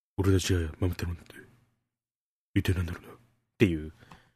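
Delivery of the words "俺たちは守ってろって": put-on detective voice, lower, quieter, slower. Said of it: "モノマネだよね".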